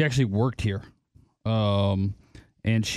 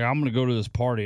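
normal talking voice

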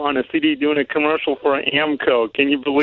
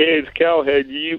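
local commercial read, pitchman style. Mimicking a coworker's stumbling commercial read: imitating Cal's commercial read. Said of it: "and then you were like".

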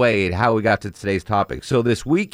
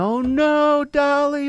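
very high, wailing, sobbing cry. Retelling an old woman at a wake hearing who died: imitating her sobbing. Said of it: "Old woman just starts bawling, sobbing".

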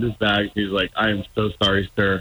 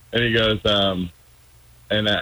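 usual speaking voice

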